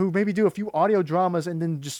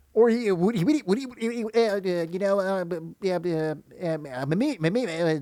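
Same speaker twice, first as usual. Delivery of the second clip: put-on stuttering cartoon pig voice, slower. Talking about cartoon impressions, show how the character always sounds in a stuttering Porky Pig voice. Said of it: "porky pig is always going to have that stutter".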